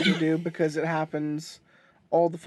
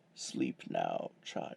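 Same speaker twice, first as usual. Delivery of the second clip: velvety, smooth, soothing hushed whisper; 13 dB quieter than usual. Imitating the other speaker's story reading: smooth chocolate voice. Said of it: "chocolate voice there".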